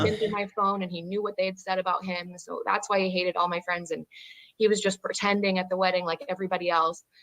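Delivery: ordinary delivery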